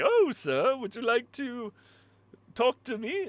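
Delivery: squeaky robot voice, very high pitched. Mocking the robot that keeps zooming in: imitating the game robot. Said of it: "He's like".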